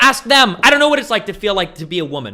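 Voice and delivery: loud, high-pitched, exasperated tone.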